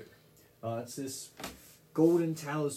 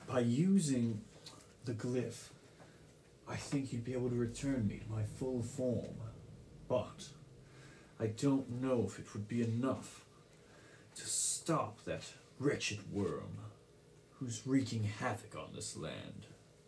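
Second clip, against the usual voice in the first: soft, drained, weakened ancient spirit voice; 3 semitones lower, 6 dB quieter than usual. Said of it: "As the water serpent around your neck looks towards you and says, ... I am [name]. I am a protector of this land. But I've been weakened until now".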